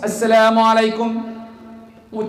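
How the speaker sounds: loud, declaring, announcing tone. Speaker demonstrating how to greet one's home on arrival, loud greeting. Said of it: "A loud voice".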